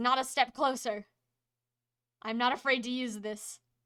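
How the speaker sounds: threatening, menacing tone. Voicing a robed man holding a knife to a hostage: robed man threatening with a staff. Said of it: "he says".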